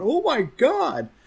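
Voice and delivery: acted scream. Recalling watching a show, the speaker re-enacts screaming at the TV. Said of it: "out loud screaming at the TV going".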